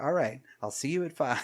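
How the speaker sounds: smooth comedic delivery. Retelling a film character's calm reply on a phone call: imitating smooth Borscht Belt talk. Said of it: "the way that he talked like that was so fucking smooth".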